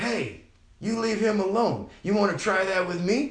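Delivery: acted, high-pitched hollering. Retelling a mother coming out of the house, retelling mom hollering. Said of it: "She hollers at Harold".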